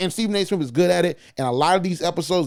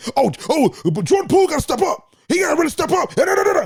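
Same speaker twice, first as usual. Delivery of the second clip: very high, rising sports-pundit screaming rant; 11 semitones higher, 3 dB louder than usual. Imitating Stephen A. Smith answering a calm question: Stephen A. Smith screaming. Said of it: "Stephen A. Smith finds some way to scream".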